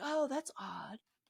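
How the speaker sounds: unbothered, no urgency at all, casual. Retelling how Loomis looks at the fleeing kids: imitating Loomis, no urgency. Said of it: "there's no urgency at all".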